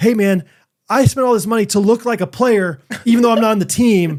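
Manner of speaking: put-on indignant, fed-up, high, angry gripe. Retelling how a man with a nacho-stained jersey complained: imitating an angry man. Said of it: "this guy's getting so mad back about this".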